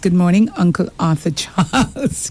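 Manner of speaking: ordinary talk, nothing marked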